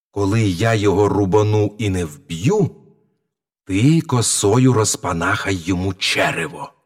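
ordinary delivery

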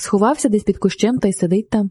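ordinary delivery

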